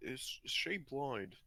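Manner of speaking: soft, slow, very quiet whispered aside. Whispering a question to a companion in the game scene: whispering. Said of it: "I'm just kinda whispering to".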